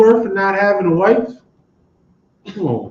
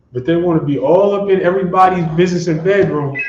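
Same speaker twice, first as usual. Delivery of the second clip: usual speaking voice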